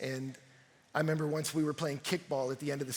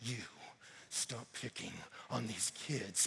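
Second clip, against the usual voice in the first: barely audible, hushed, very soft whisper; 5 semitones lower, 11 dB quieter than usual. Retelling how a dad warned a bully: imitating a whisper. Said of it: "whispered to him".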